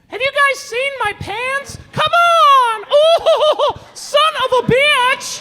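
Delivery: very high, squeaky, slow and drawn-out voice. Doing Dad for his sister as if Dad spoke in Mickey Mouse voice. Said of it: "this is my impression of Dad. If Dad spoke like Mickey Mouse".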